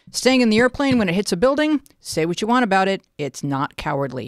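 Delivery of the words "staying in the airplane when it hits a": plain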